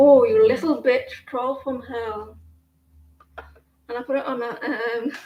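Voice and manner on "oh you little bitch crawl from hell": put-on English accent. Quoting a line from a tv show: imitating an english accent. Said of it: "she says it in an English accent".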